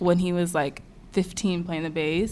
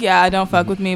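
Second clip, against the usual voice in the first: usual speaking voice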